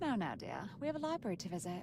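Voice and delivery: put-on British accent. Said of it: "It sounded very British".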